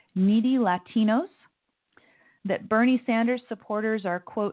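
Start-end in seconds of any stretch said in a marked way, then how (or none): none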